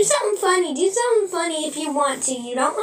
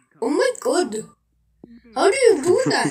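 put-on animated-sitcom cartoon character voice. Showing off voice acting, a line in a The Simpsons character voice. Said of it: "That's another voice from The Simpsons".

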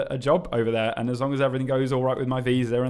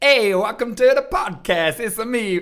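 very high, loud, belted, put-on Italian accent; 9 semitones higher, 6 dB louder than usual. Podcast host attempts an American accent but lands on Mario-style Italian accent. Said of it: "I'm just going to get an American accent immediately. ... No, that's Italian".

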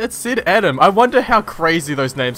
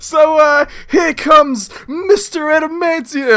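mock announcer voice, much higher, louder, slower; 11 semitones higher, 5 dB louder than usual. Commenting on a slow entrance, the speaker imitates the announcer. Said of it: "Is the announcer like".

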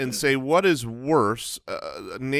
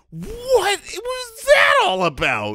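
very high-pitched, slow, drawn-out, disbelieving. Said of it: "lock eyes incredulously and say".

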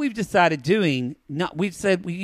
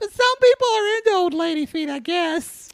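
high, put-on old lady voice. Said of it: "She, like".

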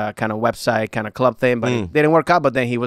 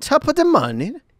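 terrible put-on English accent, pitched very high. Challenged to show off an accent, bad english accent. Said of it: "we thought my English accent was bad. He just topped it".

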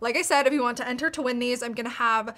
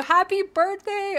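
high, slow, loud, sing-song delivery. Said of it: "Can you please say happy birthday to my daughter".

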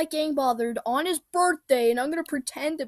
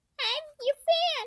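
very high-pitched fake put-on voice; 14 semitones higher than usual. Playing a fan in a bit with the others: high-pitched put-on voice. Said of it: "Not the high-pitched voice".

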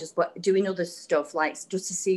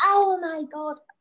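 shrill, very high screamed outburst; 10 semitones higher, 4 dB louder than usual. Recalling finishing 100 double unders on video, retelling a scream. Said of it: "I like screamed out".

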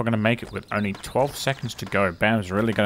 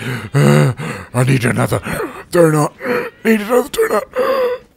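put-on winded panting, breathless, raised and very slow; 6 semitones higher, 10 dB louder than usual. Retelling what a security guard said, imitating someone out of breath. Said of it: "that security guard sounded like he was out of breath".

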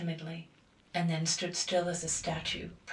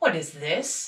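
severe, stern, raised voice with alarm growing underneath; 7 dB louder than usual. A father stops his daughter from rushing to an intruder, stern, with rising alarm. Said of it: "Demanded he sternly, but in rising alarm".

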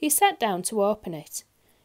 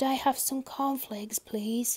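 soft whisper under the breath; 4 semitones higher, 4 dB quieter than usual. Reading a customer's reply to a grocer who bellowed at him, whispered. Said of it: "whispered Mr. Quiet".

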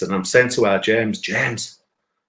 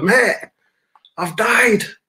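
put-on shout, higher; 11 semitones higher, 3 dB louder than usual. Retelling shouting to the ambulance driver: retelling own shouting. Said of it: "So I'm shouting to the driver".

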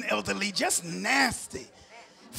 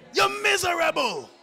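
Panamanian accent with twang; 5 semitones higher than usual. Showing the one way the phrase must be said: slight Panamanian twang. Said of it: "since I'm Panamanian, I got to say it a certain way ... You got to say it with a little twang with it".

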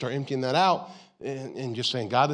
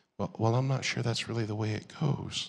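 lowered, softer, dialed-down, calming voice; 3 semitones lower, 5 dB quieter than usual. Showing how to answer someone who frustrates you: lowered voice. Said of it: "lower your voice".

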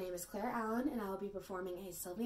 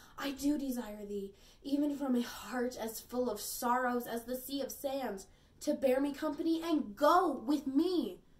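earnest, raised, pitched-up pleading in classical verse style; 5 semitones higher, 7 dB louder than usual. An actor performs a Shakespeare monologue as a grieving lady: Shakespearean monologue. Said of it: "and on the justice of my flying hands to keep me from a most unholy match, / a lady's grief, / [name] Monologue - Shakespeare - [name]".

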